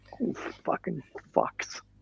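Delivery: hushed, whispered mutter under the breath. Recounting a woman's reaction to the podcast name, acting out her muttering under her breath. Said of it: "and then under her breath".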